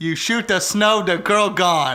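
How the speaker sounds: very loud, slow, broken put-on caveman accent. Dumbing down an explanation for the others: put-on caveman accent. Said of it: "The caveman accent?".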